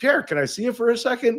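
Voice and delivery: happy, bubbly, bright, high-pitched voice. Retelling a coach's invitation at the All-Star Game: imitating Bill Dineen happy and bubbly. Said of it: "he's always happy and bubbly".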